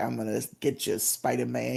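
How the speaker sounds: put-on New York accent. Imitating a cartoon villain's line to Spider-Man: Hammerhead New York accent. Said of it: "he had, like, a New York accent".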